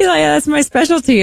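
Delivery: put-on Norwegian accent. Retelling a man's reply to a compliment, norwegian accent. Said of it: "this is [name]'s Norwegian accent".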